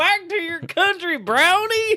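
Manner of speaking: put-on West Virginia accent, pitched very high. A co-host mimics a stereotypical voice, mock West Virginia accent. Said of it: "That's some West Virginia shit".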